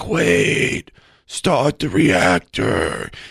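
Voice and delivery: very slow, faint, whispery dying voice. Quoting the little guy in Total Recall: whispery dying voice. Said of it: "It's the same voice".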